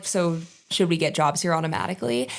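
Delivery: ordinary delivery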